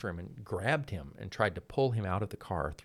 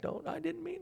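put-on screaming and crying, tearful, higher; 5 dB quieter than usual. Retelling a fight with a sheriff, imitating screaming and crying. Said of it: "Zindler screaming and crying back".

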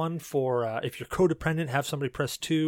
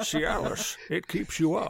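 slow, drawn-out, rough, creaky put-on character voice; 2 semitones higher than usual. Delivering a Cialis line on request in the Decker Cain voice. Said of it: "I can even do it in the Decker Cain voice".

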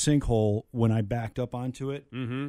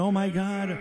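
mock high, screaming outcry; 8 semitones higher than usual. Retelling falling into a grave as a child: imitating a mother screaming. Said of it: "My mother's screaming".

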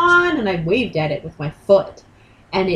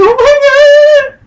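mock stunned shriek, very high and very loud; 13 dB louder than usual. Retelling a swan eating a shoe: retelling own surprised cry. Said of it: "I was so surprised".

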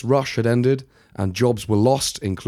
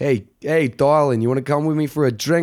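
put-on New York accent, higher; 3 semitones higher than usual. Acting out a man asking a woman for a drink: put-on new york accent. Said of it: "He's literally like".

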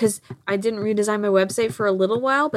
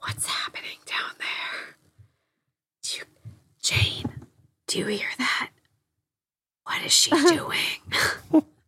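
mock whisper, higher and quieter; 6 semitones higher, 4 dB quieter than usual. Imagining hotel guests reacting to the noise: imitating someone whispering.

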